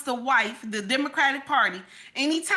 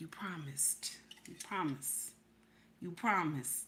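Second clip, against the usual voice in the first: breathy, very soft whisper, close into the ear; 9 semitones lower, 17 dB quieter than usual. Retelling whispering a reminder in her husband's ear: imitating own whisper. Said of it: "'Cause I whisper in his ear".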